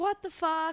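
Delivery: re-enacted scream. Recalling a lady grabbing her handbag, the speaker retells a scream. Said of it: "and I just screamed".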